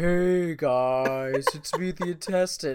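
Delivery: gloomy donkey voice, guys drawn out. Describing a show's intestine character, the speaker quotes it: Eeyore voice. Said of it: "he talks like Eeyore".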